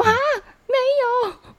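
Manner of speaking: very high, loud, laugh-filled voice. Retelling an awkward call to an older brother: imitating a loud laugh. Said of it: "我就哈得很大声".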